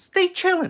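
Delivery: very high, squeaky little voice. Show how a TikTok person who drives a Subaru sounds, in a squeaky Katya BRZ voice. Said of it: "That's how she sounds".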